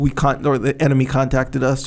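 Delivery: ordinary talk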